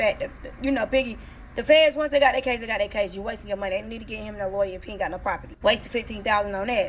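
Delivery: ordinary talk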